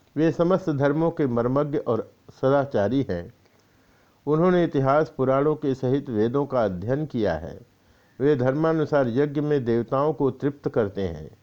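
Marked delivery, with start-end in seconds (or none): none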